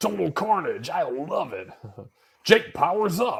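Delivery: slow, loud, booming delivery. Recalling a favorite game, imitating the Rock and Roll Racing announcer. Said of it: "he'd always be like that".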